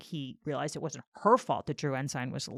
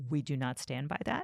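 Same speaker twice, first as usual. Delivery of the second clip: imitated quiet voice, spoken quieter; 3 semitones lower, 10 dB quieter than usual. Retelling a lawyer's answer to the judge: imitating someone speaking quietly. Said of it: "she just said really quietly".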